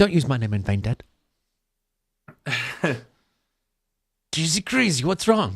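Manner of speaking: put-on New Zealand accent. Answering Dad after he swears, in a New Zealand guy from Thor: Ragnarok voice. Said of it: "You sounded like um the New Zealand guy".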